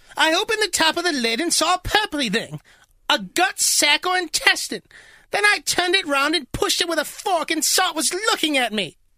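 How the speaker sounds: very high-pitched put-on English accent. Retelling what a woman from England said, the speaker uses an English accent. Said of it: "She's from England, so I have to".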